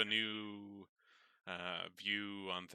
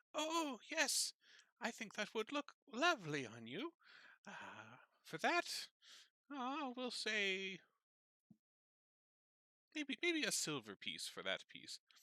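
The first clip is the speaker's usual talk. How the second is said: very high, bubbly, sing-song, cheery voice. Game master voicing the shopkeeper greeting a nervous customer: cheerful elven shopkeeper voice. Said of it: "she kind of cheerily sees Nat walking over".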